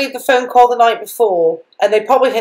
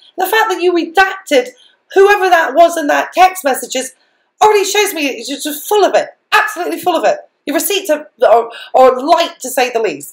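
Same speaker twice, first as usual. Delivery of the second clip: heated, getting angry, pitched-up rant; 5 semitones higher than usual. Addressing someone directly, getting angry despite trying not to. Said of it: "I don't mean to get angry".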